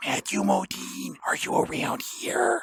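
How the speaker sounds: soft whisper. Acting a scene, calling out for matthew modine: whispering. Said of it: "why are you whispering like that?".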